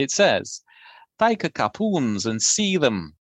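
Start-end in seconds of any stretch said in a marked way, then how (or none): 1.2-3.1 Middle English pronunciation. Reading a blancmange recipe aloud, in mock Middle English accent. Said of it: "In my best Middle English accent".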